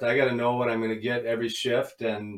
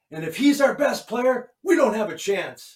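put-on angry French accent, pitched higher; 11 semitones higher, 3 dB louder than usual. Retelling a coach's locker-room rant: imitating Jacques's angry French accent. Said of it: "with the French accent and being angry".

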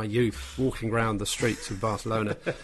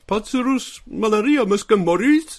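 shrill, very high, very loud cartoon voice; 8 semitones higher, 8 dB louder than usual. Explaining what they must do to make people laugh, the speaker uses a cartoony voice. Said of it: "I have to talk in this completely different cartoony voice".

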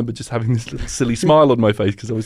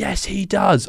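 put-on furious old lady voice, pitched up high; 8 semitones higher than usual. Retelling an old lady in the front row standing up: imitating an angry old lady. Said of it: "and she was so mad".

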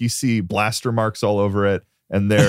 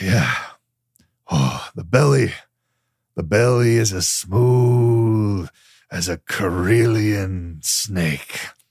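put-on drunk, tipsy character voice. Voicing a character with a bottle, admiring a ship: drunk character voice. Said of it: "very out of it at this point".

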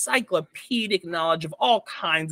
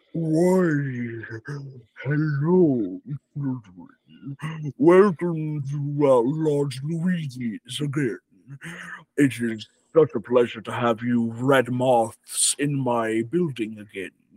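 put-on monster voice, lower pitch; 3 semitones lower than usual. Voicing Large Luigi greeting a table of adventurers: Large Luigi voice. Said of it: "he comes up to all of you and he says".

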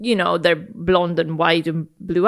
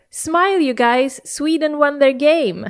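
mock high called-out hollering; 9 semitones higher than usual. Retelling what a young boy on a park bench shouted: imitating someone shouting. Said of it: "he shouts at us, like".

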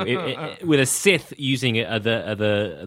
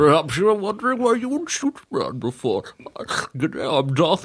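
saliva-filled villain voice; 5 semitones higher than usual. Asked why no one did a Bane voice, trying one: wet Darth Bane voice. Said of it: "Your Bane sounds like there's a lot of saliva in his mouth".

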